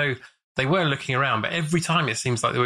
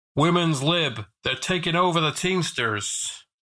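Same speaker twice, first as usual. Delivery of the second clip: put-on American accent; 4 semitones higher than usual. Retelling a story, quoting a man's remark in a put-on american accent. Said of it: "Roger again busts out his American accent".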